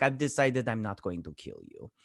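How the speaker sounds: put-on villain accent. Recapping a show scene, in a put-on Zemo accent. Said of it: "I don't know why I'm doing that accent anyways".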